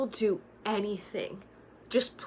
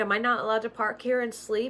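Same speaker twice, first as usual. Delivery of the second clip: plain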